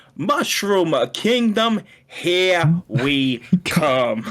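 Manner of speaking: put-on high, very slow, drawn-out, poorly done New York accent. Quoting a movie trailer line: Chris Pratt's bad New York accent. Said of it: "doing the New York accent when he says".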